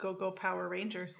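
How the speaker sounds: usual speaking voice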